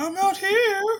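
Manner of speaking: very high, faked woman's voice. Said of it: "did this character do a lady's voice?".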